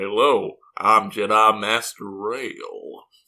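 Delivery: hammy, very slow, deep cowboy voice. Describing one of Dooku's Padawans hamming it up, doing Rael's hammy cowboy voice. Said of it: "like maximum cowboy voice".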